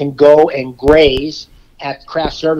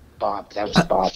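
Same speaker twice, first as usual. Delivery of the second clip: whispered aside; 7 semitones lower, 8 dB quieter than usual. Retelling what someone whispered in his ear about a pizza order, retelling a whisper. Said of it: "Ron whispered in my ear".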